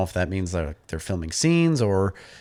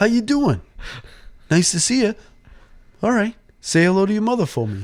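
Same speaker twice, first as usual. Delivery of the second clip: very high-pitched comic impression voice, sketch-style; 12 semitones higher than usual. Retelling a sketch where a farm visitor greets animals: Mark Wahlberg impression. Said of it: "Andy Samberg does Mark Wahlberg".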